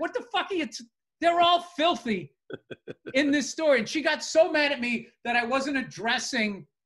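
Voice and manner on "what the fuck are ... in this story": high voice, talking through laughter. Recounting an argument, the speaker acts out their reply to her, retelling a laughing reply. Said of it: "I just started laughing going like".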